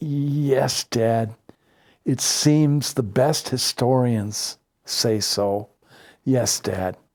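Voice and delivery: hushed, barely-there, very quiet voice, "yes" drawn out. Retelling own answer to the father: retelling own very quiet reply. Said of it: "I was even quieter".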